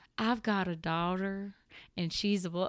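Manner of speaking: imitated Southern accent. Quoting a TikTok sound about babies to listeners; imitating a southern accent. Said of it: "maybe we cut out my southern accent".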